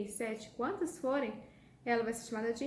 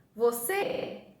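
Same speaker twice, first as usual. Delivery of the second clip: você with final cê drawn out; 6 dB louder than usual. Showing how one calls for someone's attention, the speaker calls out você, stretching cê. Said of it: "Como se eu estivesse chamando alguém... qual que eu estendi, fiquei mais tempo falando?".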